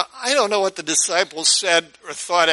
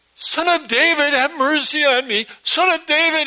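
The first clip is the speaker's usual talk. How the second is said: mock woman's voice, crying out, very high; 10 semitones higher, 4 dB louder than usual. Retelling a story, acting out a woman crying out after him. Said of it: "this woman starts crying after him".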